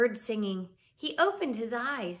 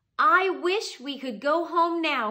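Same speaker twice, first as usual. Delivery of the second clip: very loud, high-pitched shout; 5 semitones higher, 5 dB louder than usual. Narrator reads Jack pointing to a picture in the book, shouted. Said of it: "he shouted".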